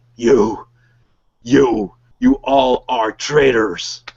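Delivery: slow, enraged, furious orc warlord shout. Voicing an enraged orc leader confronting the players: enraged orc warlord. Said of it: "And he's really angry".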